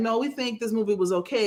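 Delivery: normal talking voice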